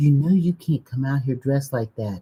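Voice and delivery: put-on whisper. Retelling what a lady in a store whispered: imitating a whisper. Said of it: "She whispered to me".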